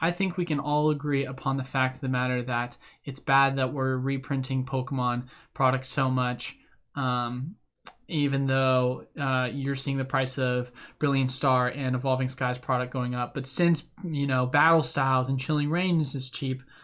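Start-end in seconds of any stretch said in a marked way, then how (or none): none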